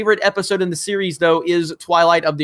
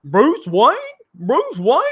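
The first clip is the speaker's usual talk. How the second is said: mock dumbfounded, pitched higher; 6 semitones higher than usual. Retelling a film scene, imitating Gordon sounding dumbfounded. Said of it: "he just said it like he was dumbfounded".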